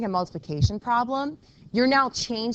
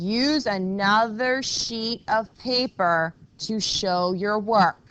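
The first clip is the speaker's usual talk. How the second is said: very slow, deliberate, each word spaced. A teacher repeating a homework instruction to students who weren't listening, saying it really slowly. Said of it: "I'm going to say this really slowly".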